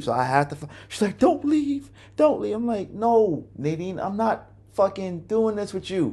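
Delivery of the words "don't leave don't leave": acted, tearful begging, pitched way up, crying. Recounting a fight as the speaker leaves, imitating Nadine crying. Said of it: "she's crying".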